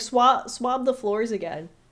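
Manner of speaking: loud, barked, shouted yell. Retelling a movie scene where one character orders another: imitating someone yelling.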